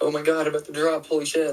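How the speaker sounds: mock nervous, panicked freaking out. Retelling own reaction on reaching the drop in a level: imitating own past freaking out. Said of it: "I would immediately start freaking out".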